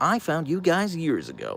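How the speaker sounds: salesy infomercial-host voice, high with swooping pitch. Recalling what she said to Lindsay earlier, in an infomercial voice. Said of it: "like in kind of like an infomercial voice".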